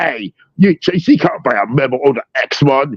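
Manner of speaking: drawled put-on Australian accent, high-pitched and slow. Retelling a cartoon scene, imitating Wolverine with an Australian accent. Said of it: "he's talking like that".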